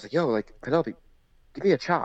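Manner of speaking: lighthearted, joking, playful tone. Retelling what they said to her back then: retelling a joking request. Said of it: "just jokingly".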